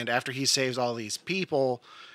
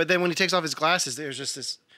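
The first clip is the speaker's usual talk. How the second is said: ordinary delivery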